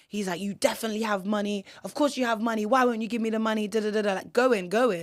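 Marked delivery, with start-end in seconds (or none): 0.3-3.6 put-on man's shout, pitched higher. Retelling how a man on a train demanded money, imitating a man shouting. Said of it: "And he's shouting".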